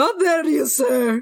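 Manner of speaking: tearful crying voice. Repeating the same reply to the doubt: crying in character. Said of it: "I have to cry".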